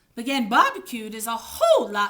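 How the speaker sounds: plain reading voice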